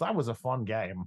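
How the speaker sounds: ordinary delivery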